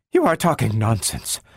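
spoken in a whisper. A woman, her head bent, answers a man: whispering. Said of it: "she whispered".

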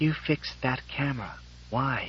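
hushed, very quiet whisper through unmoving lips. Bride being kissed by the groom at her wedding, whispering through unmoving lips. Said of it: "Susan whispered through unmoving lips".

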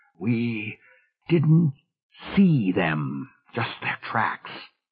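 slow, halting, effortful speech. Narrator reads a character's reply in a story, speaking with tremendous effort. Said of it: "said with a tremendous effort".

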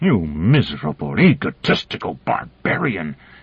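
words forced out in strained grunts. Narrator reads a man's words as he squeezes another's throat, grunted out. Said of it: "he grunted out".

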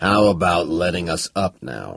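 low, rumbling voice. Narrator reads Tubal asking to be let up: low rumble. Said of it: "He rumbled".

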